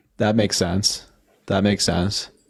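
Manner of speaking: sarcastic, clearly insincere tone. In a conversation, speaker answers the other person's excuse with sarcastic agreement. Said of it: "That's that sarcasm in my voice".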